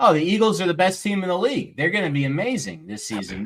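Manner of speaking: mock-enthusiastic sarcasm. Giving an example of sarcasm after another speaker asks for some: sarcastic. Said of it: "Give me something".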